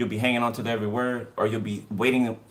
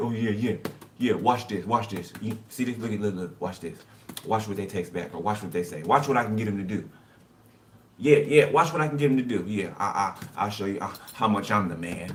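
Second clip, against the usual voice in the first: cocky, boastful, bragging trash-talk tone. Acting out someone talking trash behind a partner's back: imitating someone bragging. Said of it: "they're talking shit over here like".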